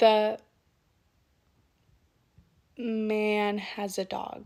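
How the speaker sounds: brief pause, then loud, drawn-out man. A person who stutters demonstrating a technique, with a pause before 'man'. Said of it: "I paused to prepare myself".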